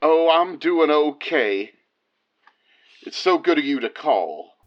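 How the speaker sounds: heavy, put-on Tennessee accent. Voicing a chaplain friend answering a call: Leslie voice with big accent. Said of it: "Big accent".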